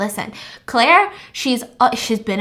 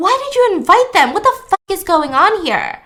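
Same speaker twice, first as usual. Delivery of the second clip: scream, higher and louder; 7 semitones higher, 5 dB louder than usual. Retelling a story where a character loses his composure: imitating someone screaming. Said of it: "he starts screaming at Eden".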